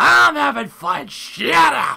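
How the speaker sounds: high, rough, drawn-out slow bellow. Repeating a line he just said, now as Vince McMahon voice. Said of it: "That sounded more like Vince McMahon".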